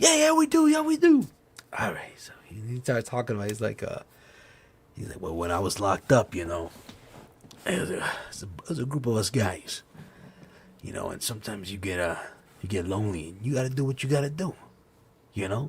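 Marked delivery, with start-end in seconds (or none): 5.2-15.7 put-on low, hushed old Italian mafia guy voice. Retelling what a dad told the kids: imitating an old italian mafia guy. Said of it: "his dad's like an old fucking mafia Italian guy".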